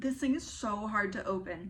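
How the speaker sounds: ordinary delivery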